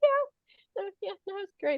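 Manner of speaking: very high, put-on, breezy, casual nonchalance. Retelling answering Zach on the drive down while hiding a plan: put-on casual and professional. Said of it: "I'm just being all casual and professional".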